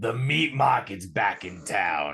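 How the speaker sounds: three-packs-a-day smoker's voice with a slow drawl. Retelling two ladies on a philly stoop catcalling, in a heavy smoker's voice. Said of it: "with the heaviest smoker's voice you could think of".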